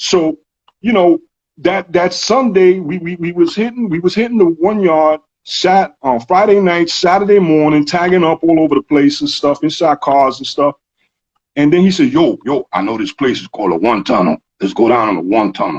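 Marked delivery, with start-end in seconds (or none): 12.1-15.8 rough rasp through every word. Retelling what a friend said to him: imitating a friend's raspy voice. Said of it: "He had that real raspy voice".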